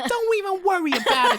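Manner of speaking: put-on Jersey accent. Recapping a show scene, the speaker quotes a friend in Molly's New Jersey accent. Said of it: "Molly's from Jersey Shore".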